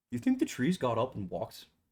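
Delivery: very quiet, hushed, barely audible voice. Retelling how Steel asks a question at the trails, in a very quiet voice. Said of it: "Steel very quietly goes".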